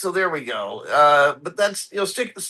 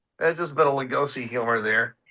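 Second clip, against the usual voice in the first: ordinary talk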